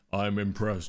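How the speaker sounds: deep, low-energy, bored voice. Imitating what you hear Big Show say: Big Show impression, low voice. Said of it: "It's because of his low voice".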